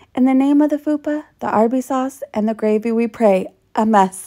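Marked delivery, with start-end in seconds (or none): none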